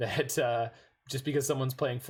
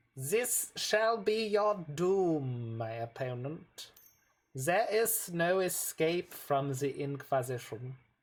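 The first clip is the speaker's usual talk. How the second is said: ridiculous, hammed-up German accent, swooping high, "doom" stretched; 5 semitones higher than usual. Showing the voice they did for the Inquisition: ridiculous German accent. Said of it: "ridiculous German accents".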